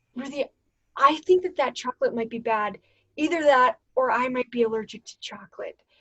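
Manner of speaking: anxious, stressed-out, worked-up fretting delivery. Retelling a friend's worry about the chocolate: imitating a stressed-out friend. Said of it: "so stressed out".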